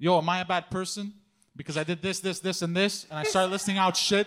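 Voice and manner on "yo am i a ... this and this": usual speaking voice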